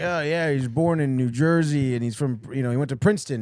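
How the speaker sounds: mocking, rambling delivery, rattled off quickly. Mocking an announcer who rambles on air: imitating Dave Maloney. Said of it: "He was like".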